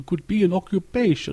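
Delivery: slow, high-pitched, vampire-ish drawl. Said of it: "You almost went into a vampire there".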